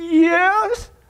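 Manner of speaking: trembling yes, voice quavering and drawn out. Telling a joke, a frightened man answers the window: saying shakily. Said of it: "shakily says".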